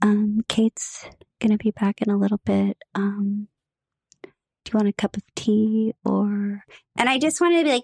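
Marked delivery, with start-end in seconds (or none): 0.0-6.6 very slow, tiptoeing, drawn-out delivery. Imitating one of kate's exes offering a cup of tea: imitating someone talking very quietly. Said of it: "start talking really, really quietly".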